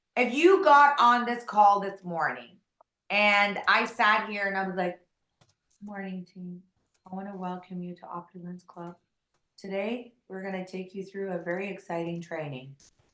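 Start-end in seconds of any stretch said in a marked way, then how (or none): 5.8-12.7 feeble, very quiet, low, barely audible monotone. Speaker showing a team call how a weak opening sounds, monotone, weak voice. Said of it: "with a very monotone, weak voice".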